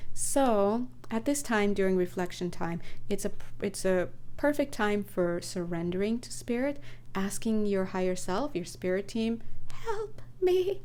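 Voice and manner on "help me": very high-pitched voice with a slight tremble. During reflection time, surrendering to spirit: slight tremble in voice. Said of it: "You could say it like that, with a little tremble".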